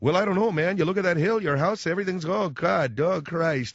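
put-on Midwestern Chicago-Minnesota accent. Speaker imitates his father-in-law from Chicago, Chicago-Minnesota accent. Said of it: "I'm doing sort of a Chicago, Minnesota accent".

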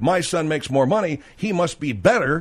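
ordinary talk

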